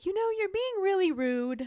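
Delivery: very high-pitched, absent-minded delivery. Retelling a scene where Luna answers Harry, imitating Luna absent-mindedly. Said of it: "almost absent-mindedly".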